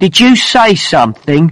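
menacing tone. Mike answers Luke, who told him to stop, threateningly. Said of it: "asked Mike threateningly".

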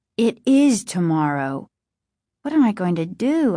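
ordinary delivery

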